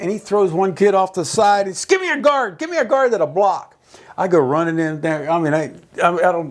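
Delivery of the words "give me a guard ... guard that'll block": coach-style yelling, high to very high pitch. Retelling how the line coach yelled for a blocker: imitating a coach yelling. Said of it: "He's yelling".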